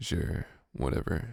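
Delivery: deep, hushed, breathy, whispered emo-guy voice. Voicing an emo customer character ordering a drink, in a deep emo dude voice. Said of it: "We'll give him like a deep voice".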